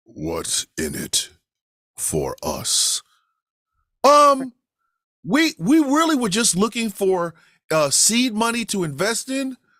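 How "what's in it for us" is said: deep, slow, breathy baritone. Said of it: "changes his whole fucking voice to this deep baritone".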